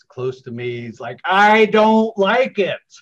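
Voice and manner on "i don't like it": put-on high, very loud, drawn-out tiny toddler voice. Retelling what a little two-year-old on a plane said, tiny little child's voice. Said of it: "I hear this tiny little voice".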